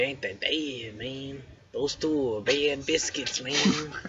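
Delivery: put-on thick Mexican accent. A character in a tabletop game talking about two tieflings, in a stereotypical mexican accent. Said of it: "the most stereotypical Mexican accent you can say".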